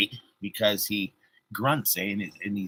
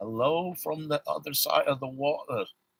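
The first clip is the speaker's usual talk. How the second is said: attempted British English accent, pitched up; 6 semitones higher, 4 dB quieter than usual. Greeting someone from Cornwall, England: put-on English accent. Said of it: "I don't know if that was a good accent or not".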